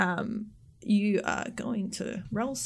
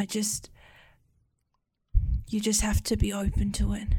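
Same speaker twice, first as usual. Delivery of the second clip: weak, shivering, trembling voice of a dying woman. Voicing a weak dying woman who grabs a player's arm: weak, shivering dying woman. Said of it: "shaking and shivering".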